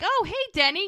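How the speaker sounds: mock sudden cheerfulness. Retelling an argument, the speaker voices the man greeting someone who walks up, retelling a sudden cheerful greeting. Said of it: "Totally changes his whole personality in like a hot second".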